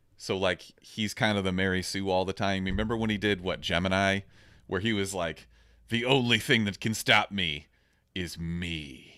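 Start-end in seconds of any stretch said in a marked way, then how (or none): 5.9-9.0 slow delivery with "me" drawn out. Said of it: "my impression of him".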